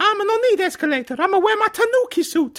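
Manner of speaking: very high, in-character put-on Italian accent. Refusing to drop character while planning a story with a partner: Mario voice. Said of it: "I don't think I can drop character now".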